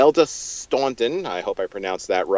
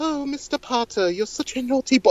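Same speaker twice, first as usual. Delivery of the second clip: put-on sugary, fake sweet little voice, very high. Imitating an evil woman character addressing a boy, fake little sweet voice. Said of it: "that little sweet voice".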